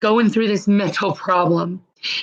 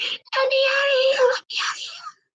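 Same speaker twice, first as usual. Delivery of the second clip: very high-pitched, repeated, pleading, begging cry; 4 dB quieter than usual. Retelling a girl screaming in jail all night: imitating someone screaming. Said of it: "the stupid bitch was screaming".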